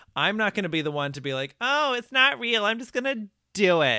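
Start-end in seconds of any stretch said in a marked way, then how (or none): 1.7-4.0 high, raised, doubting skeptical voice. Mocking the other speaker's skeptic attitude: imitating the other speaker. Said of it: "Is that your impersonation of me?".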